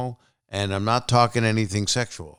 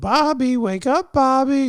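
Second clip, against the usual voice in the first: very high, slow, haunted cartoon puppet voice; 4 dB louder than usual. Imitating how his mother woke him as a kid, haunted ghost puppet voice. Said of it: "It was like a haunted ghost, Felix the Cat, kind of, I don't know, puppet voice".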